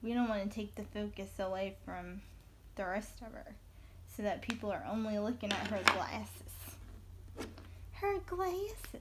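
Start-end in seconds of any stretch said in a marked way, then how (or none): 7.9-9.0 silly put-on Southern accent, played up, pitched up. Talking about her glasses, jokingly repeating the phrase in a Southern accent. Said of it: "You like that, that accent?".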